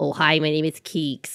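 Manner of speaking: nasally, small made-up little-animal voice. Showing the voice she imagines for her baby Keeks, in nasal Keeks voice. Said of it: "it's kind of like nasally".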